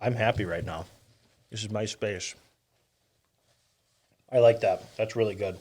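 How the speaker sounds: talking with mouth full. Tasting food at the microphone, eating while talking. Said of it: "if you can hear me eating into the microphone".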